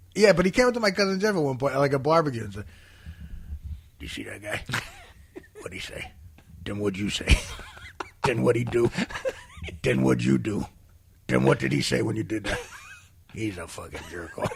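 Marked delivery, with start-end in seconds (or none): 4.0-14.6 put-on broad, low, swooping uncle voice. Retelling what an uncle said to a cousin at a barbecue, imitating Uncle Frank. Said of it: "I did that voice sometimes".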